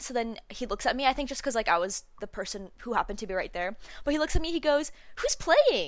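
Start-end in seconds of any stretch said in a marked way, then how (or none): 5.2-5.9 acted, really cheery, high, loud peppy voice. Retelling a passerby in awe of the line asking the speaker, imitating a cheery, peppy voice. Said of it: "Like in a really like cheery, peppy voice".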